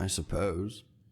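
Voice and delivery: very low, flat, bored and unenthusiastic monotone. Answering another speaker who wants to hear something else: unenthusiastic. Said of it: "you sound so thrilled".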